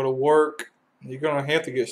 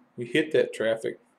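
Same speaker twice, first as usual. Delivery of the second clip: ordinary delivery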